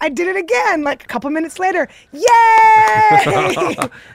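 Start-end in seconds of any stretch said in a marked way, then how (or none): 2.1-3.8 high, loud, fake triumphant cheer. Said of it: "So then I was like".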